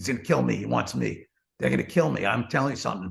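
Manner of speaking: wild, rough, frantic panicked ranting. Telling a story about John Gotti threatening a driver, imitating Letterman going crazy. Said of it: "Letterman then gets crazy".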